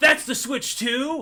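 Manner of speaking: high, slow, drawn-out awestruck soy pog gush. Retelling what a bald man in the break room said: imitating a soy pog voice. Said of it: "He said it in the most soy pog voice ever".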